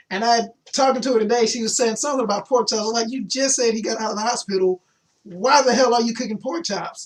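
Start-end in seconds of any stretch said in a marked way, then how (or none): none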